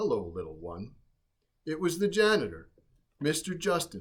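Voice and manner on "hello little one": very deep, soft, hushed and kindly voice. Narrator voicing the janitor Mister Justin greeting the little bird, deep and kind. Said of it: "heard a deep, kind voice".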